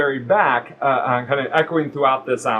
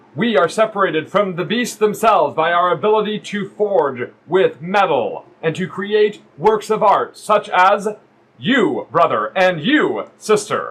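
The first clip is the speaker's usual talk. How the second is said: loud, boisterous preaching voice, much higher pitch; 5 semitones higher, 4 dB louder than usual. A voice echoing through a stone forge chamber, preaching its merits, loud and boisterous. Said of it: "a loud boisterous voice, preaching the merits".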